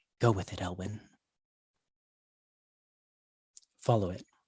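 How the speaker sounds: soft, hushed, motherly, matronly half-whisper. Voicing the masked lady half-whispering in a player's ear: half-whispering matronly voice. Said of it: "you hear a voice whisper in your ear".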